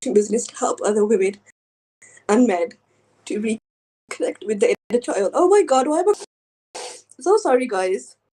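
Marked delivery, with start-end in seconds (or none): 5.3-8.2 overcome and choking up, voice pitched up. Presenting a coaching business to the audience, the speaker suddenly turns emotional. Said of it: "I was expecting to be so emotional".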